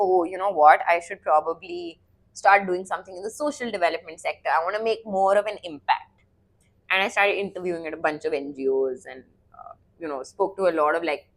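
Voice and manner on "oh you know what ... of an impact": ordinary delivery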